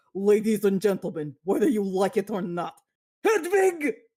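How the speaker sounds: put-on strong German accent with announcer-style delivery. Describing the musical's opening, the speaker quotes the guitarist's introduction in a strong German accent. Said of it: "who has a very strong German accent".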